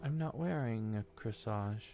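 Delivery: muttered under breath. Voicing the girl as a player walks away: muttered under her breath. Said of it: "under her breath, just barely enough for you to hear".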